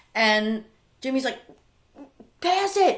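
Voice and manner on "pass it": put-on screaming, higher. Retelling a tense game where Jimmy screams at a teammate: imitating Jimmy screaming. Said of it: "He's just screaming".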